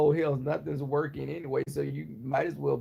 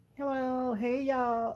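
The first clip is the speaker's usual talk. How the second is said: very high, squeaky, nasal, chirping parakeet voice; 9 semitones higher than usual. Describing how Trey talks, then imitating him: imitating Trey's parakeet voice. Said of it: "his voice is like a little parakeet from hell".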